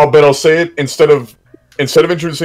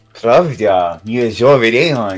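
put-on cutesy Russian accent, uwu-style baby talk. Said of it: "Russian uwu speak".

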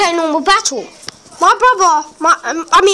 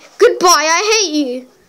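put-on fed-up, cross, angry tone. Retelling what the brother said when leaving: imitating someone angry. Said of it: "Minigamer twenty-one's got angry".

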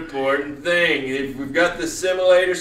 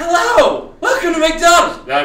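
very high, loud voice; 12 semitones higher, 6 dB louder than usual. During a driving lesson, role-playing a fast-food worker in an acting voice. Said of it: "This is my acting voice".

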